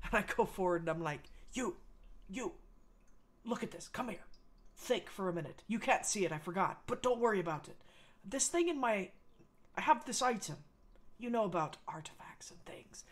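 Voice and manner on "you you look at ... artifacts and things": quiet, hushed angry voice. Playing a character showing a glowing item to another character, speaking quietly but angry. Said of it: "I'm trying to speak very quietly, but I'm a little angry".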